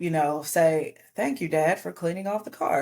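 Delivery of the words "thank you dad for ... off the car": ordinary talk, nothing marked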